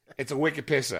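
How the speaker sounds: Bostonian New England accent. Showing off accents, then a line in a Boston accent. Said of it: "when you get to the Boston accent, it's like".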